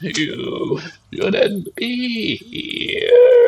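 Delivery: dried-out, dreadful, horrifying monster voice. A game narrator voices a creature calling up through a grate, in a desiccated, horrifying creature voice. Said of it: "even more desiccated and horrifying".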